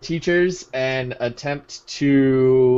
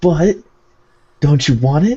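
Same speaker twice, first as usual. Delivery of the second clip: whispered, higher pitch; 3 semitones higher, 6 dB louder than usual. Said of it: "we're whispering".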